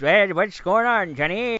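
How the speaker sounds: put-on high old-timer voice. Describing a character from an old radio play, doing the Old Timer voice. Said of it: "he would talk like this".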